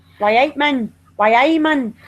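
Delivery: put-on Geordie Newcastle accent. Chatting about regional accents, the speaker tries out a Newcastle accent. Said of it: "Newcastle, I like that accent too".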